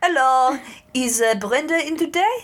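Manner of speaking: put-on slow, high-pitched French accent. Retelling a killer phoning a car dealership: french accent. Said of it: "with, like, a French accent".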